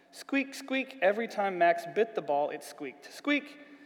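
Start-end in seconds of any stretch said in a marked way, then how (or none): none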